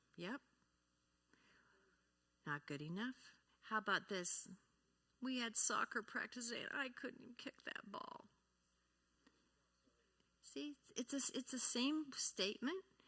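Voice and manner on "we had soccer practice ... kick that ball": sad, let-down, deflated, disappointed tone. Showing how tone changes the same sentence, in a sad, disappointed tone. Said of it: "You sound sad or disappointed or mad".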